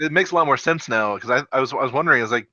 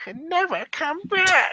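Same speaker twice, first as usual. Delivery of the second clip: very high pitch, stretched out slowly. Trying a Gollum impression that ends up sounding like Peter Griffin. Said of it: "I just sound like Peter from Family Guy".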